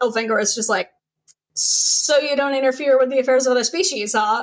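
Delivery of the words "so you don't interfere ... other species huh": put-on dry, sarcastic, needling tone. Retelling a scene from a book, imitating a sarcastic remark. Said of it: "Was that sarcasm".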